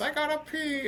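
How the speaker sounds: very high, weird, squeezed put-on voice. Retelling a story of pulling into Seattle, do a Paul Bearer impression. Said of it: "You know how his weird voice".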